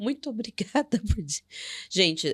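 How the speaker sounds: speaking through laughter. Reacting to the other speaker's point, laughing while talking. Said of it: "eu tô rindo".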